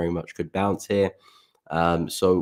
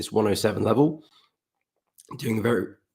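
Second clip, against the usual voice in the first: failing voice, much higher; 3 semitones higher than usual. Speaker discussing dollar chart levels while their voice gives out, voice not working. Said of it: "my voice is not working today at all".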